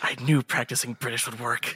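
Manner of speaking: whispering. A character whispers over to a companion after walking through the gates, whispering. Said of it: "whispers over to Clarissa".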